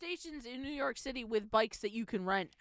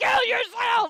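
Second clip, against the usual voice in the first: very high, very loud, shrill screech of rage; 14 semitones higher, 15 dB louder than usual. Retelling what a woman yelled, like an online game lobby: imitating an online game lobby shout. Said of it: "She went full Call of Duty lobby".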